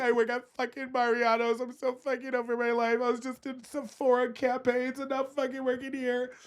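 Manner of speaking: high, tearful, sobbing, overwhelmed crying outburst. Retelling crying alone in the car after a shift: retelling own crying. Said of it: "I'm, like, crying".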